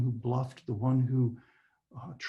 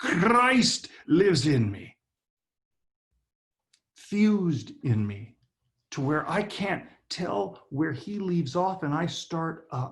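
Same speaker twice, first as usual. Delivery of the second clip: loud, lilting put-on Irish accent; 4 semitones higher, 4 dB louder than usual. Speaker saying the phrase again, unable to say it without an Irish accent. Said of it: "I can't say it without an Irish accent".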